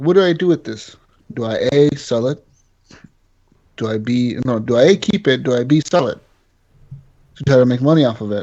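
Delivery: ordinary talk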